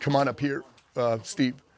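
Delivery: ordinary talk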